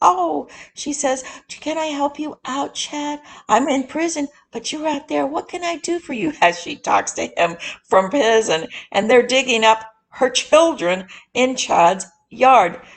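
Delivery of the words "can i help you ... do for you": put-on, sugary, sweet little voice, high-pitched. Retelling how a woman talks to a man from prison, imitating a sweet little voice. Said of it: "She's asking in that sweet little voice".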